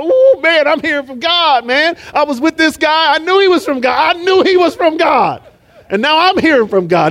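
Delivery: all-excited, puffed-up, self-important boastful tone. Preaching on Peter being called blessed, acting out Peter all excited. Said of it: "He's all excited".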